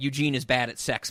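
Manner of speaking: ordinary talk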